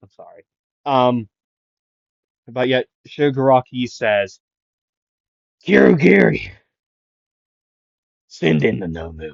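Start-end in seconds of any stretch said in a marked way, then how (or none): 5.7-9.3 rough, growling character voice with swooping pitch. Retelling a scene, quoting Shigaraki sending in the Nomu: Shigaraki impression. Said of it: "Impression warning".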